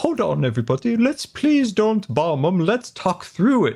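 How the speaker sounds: put-on practised British accent, condescending. Picturing a thoughtful man as Picard, talking everyone down: British accent as Picard. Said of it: "Try to work on my British accent".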